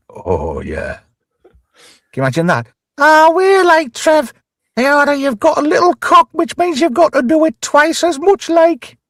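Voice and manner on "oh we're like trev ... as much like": very high-pitched Geordie accent, laid on. Acting out a fantasy scene in Jill Halfpenny's Geordie accent. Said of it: "with Jill Halfpenny's accent".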